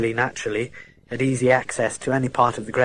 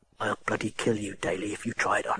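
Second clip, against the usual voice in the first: quietly threatening, menacing, lower and quieter; 4 semitones lower, 11 dB quieter than usual. Reading a scene aloud, a man threatens Daly: quiet menacing voice. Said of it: "There was a menace now in his quiet voice".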